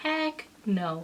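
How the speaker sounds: plain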